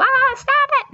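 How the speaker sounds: shrieking, very high-pitched. Explaining how to coach kids, showing the wrong way: screaming stop it. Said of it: "mean you scream".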